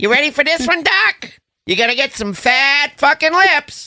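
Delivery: very high, like a cartoon rabbit. Joking about someone at the airport before a mallet hit: Bugs Bunny voice. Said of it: "doing his Bugs Bunny voice".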